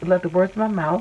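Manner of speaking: ordinary talk, nothing marked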